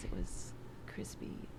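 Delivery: slow ASMR whisper, close to the mic.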